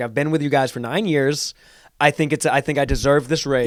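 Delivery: ordinary delivery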